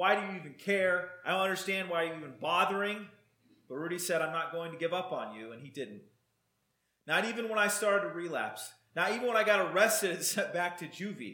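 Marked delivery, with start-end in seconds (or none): none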